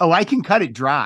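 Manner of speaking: mocking, sarcastic delivery. Retelling a haircut story, quoting the person cutting the hair, mock-sarcastic. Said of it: "I'm going to tell you sarcastically".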